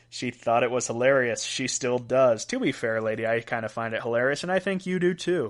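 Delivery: ordinary delivery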